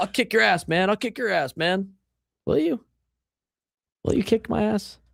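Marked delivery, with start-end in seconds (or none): 0.0-1.9 mocking macho tough-guy posturing, higher. Mocking baseball players' fight talk: imitating fake tough posturing. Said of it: "this fake, like, posturing".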